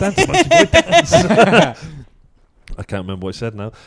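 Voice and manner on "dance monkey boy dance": very high, loud mock squeaky voice. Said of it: "I was like".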